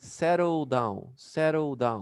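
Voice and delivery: double D linked into one long d sound. Teacher demonstrating English pronunciation to learners, one long linked D. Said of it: "So you pronounce one long D".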